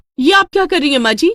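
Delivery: outright yelling, high and loud. Reading a story where the daughter-in-law suddenly cries out: shouting. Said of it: "अनु चिल्लाने लगती है".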